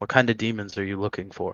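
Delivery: very quiet, hushed, under the breath. A storyteller voicing a character who speaks into steepled hands, speaking very quietly. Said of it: "he says very quietly".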